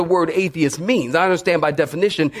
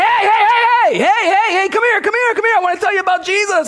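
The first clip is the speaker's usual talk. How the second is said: shrill, very high, loud preacher-style screaming; 4 dB louder than usual. Retelling calling out to people walking by on the street: retelling screaming at passersby. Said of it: "screaming at folks when they walking by".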